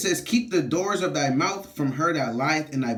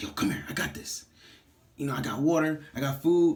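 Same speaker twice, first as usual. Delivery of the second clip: mock whispering voice. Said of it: "kinda whisper".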